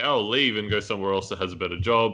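plain

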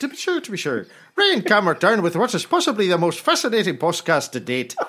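put-on Irish accent. Introducing ryan cameron's podcast, in his best irish accent. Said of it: "So I'm going to do this in my best Irish accent".

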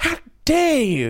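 very high, shrill, enraged, furious yell. Jeremy, hearing Ruby admit she sabotaged the machine, yells at her in a fury. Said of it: "yelled Jeremy in a fury".

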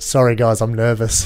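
normal talking voice

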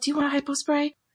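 hushed whisper. Acting out a quick aside to Posa, arm around her: whispering. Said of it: "whisper to her real quick".

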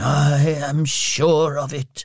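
whispering. After the Spirit's rebuke, he answers: whispered. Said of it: "whispered Scrooge".

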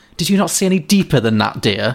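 scornful, contemptuous, condescending talking-down tone. Retelling what a woman said before turning her back, mimicking a contemptuous remark. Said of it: "she just kind of said contemptuously".

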